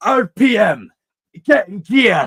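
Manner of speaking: put-on overdone Scottish accent, high, loud and slow. Mocking how an actor forced his accent, forced scottish accent. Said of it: "forcing his Scottish accent ... really emphasizing every single little like word like too much".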